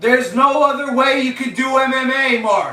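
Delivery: high, irritable shout. Speaker addressing mark directly, yelling. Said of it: "I'm sorry for yelling".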